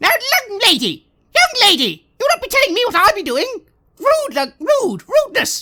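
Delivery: put-on loud, shrill, high, swooping old-woman scolding tone. Voicing an old halfling woman who taps a visitor with a broom: old halfling scolding voice. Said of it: "they give you a bit of a tap with it and go".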